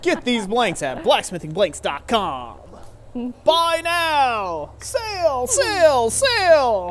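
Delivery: swooping, high TV infomercial announcer voice. Joking along that the website plug sounds like an ad, infomercial announcer voice. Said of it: "sounds like an infomercial".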